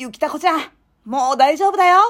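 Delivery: high, put-on kids' cartoon hero voice. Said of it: "カバオくんとアンパンマンと".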